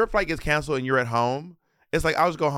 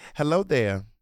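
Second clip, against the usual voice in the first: put-on southern woman voice. Imitating how Tabitha Brown would greet people: Tabitha Brown impression. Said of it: "She'd be like".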